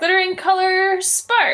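yelled out loud, high-pitched.

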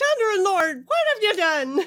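put-on Irish accent. Narrating a story, voicing a character's outburst in an Irish accent. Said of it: "I went Irish there".

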